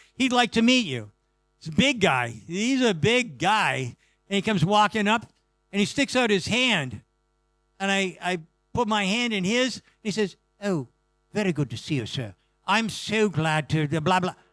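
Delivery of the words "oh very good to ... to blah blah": put-on English accent. Retelling a big guy shaking the speaker's hand in greeting, english accent. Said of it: "He's got an English accent".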